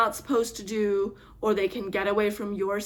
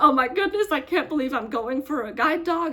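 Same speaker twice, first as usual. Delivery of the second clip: very excited, high, disbelieving gush; 5 semitones higher, 4 dB louder than usual. Describing waiting to go get a guide dog, imitating very excited self. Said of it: "very excited and very much like".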